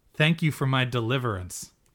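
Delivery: ordinary delivery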